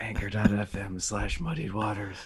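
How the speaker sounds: messed-up, hoarse, strained, hurting voice. Telling listeners where to leave messages: messed-up hoarse voice. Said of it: "Your voice is messed up".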